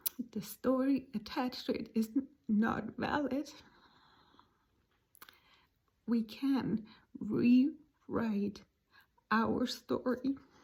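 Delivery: tearful, crying while speaking. After apologizing mid-sentence for crying, the speaker goes on while crying. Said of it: "I'm crying now".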